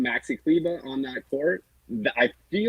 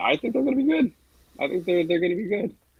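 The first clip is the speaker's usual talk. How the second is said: rising intonation, voice climbing higher throughout; 6 semitones higher than usual. Giving an opinion on the Mavericks' prospects, voice rising in pitch. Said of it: "Your voice went up there".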